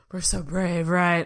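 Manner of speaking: sarcastic voice. Thanking a guest for stepping on the scale, sarcastic. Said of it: "I'm saying that kind of sarcastically".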